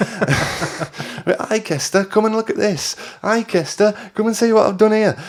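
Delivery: put-on very high, slow, drawn-out Brummie accent. Speaker imitates a woman greeting him at his parents' house, in a Brummie accent. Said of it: "She had a bit of a Brummie accent as well".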